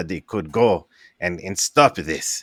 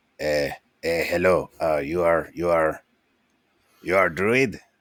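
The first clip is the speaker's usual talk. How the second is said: faltering, halting, stammering goblin voice. Game master voicing a cloaked figure greeting a druid, goblin character voice. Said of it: "and it's a goblin".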